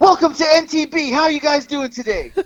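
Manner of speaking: very high-pitched, loud, bright delivery. Retelling how a guy walking past greeted them: imitating someone talking loud. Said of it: "Like loud".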